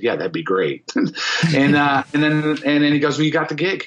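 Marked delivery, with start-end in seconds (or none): 0.0-0.9 mock-nonchalant, playing it cool and casual. Retelling his own reply when asked to play in the band, acting cool, playing it casual. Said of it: "in my cool voice".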